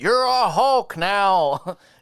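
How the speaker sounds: mock high called-out yell, now drawn out. Imagining a movie scene, retelling what the general yelled out, retelling a yell. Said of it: "He yelled out".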